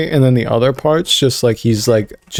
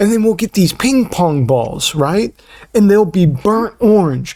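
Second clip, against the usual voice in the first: high, showy sales-pitch voice; 8 semitones higher than usual. Act out him pitching ideas for a halftime show, as an impression of someone pitching. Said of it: "this is my impression of it".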